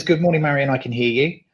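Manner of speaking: usual speaking voice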